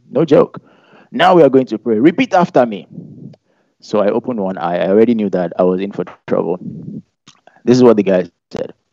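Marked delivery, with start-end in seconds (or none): 1.1-2.8 put-on Nigerian preacher's accent. Retelling what a leader said before praying, in a Nigerian accent. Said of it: "I have to switch to a Nigerian accent".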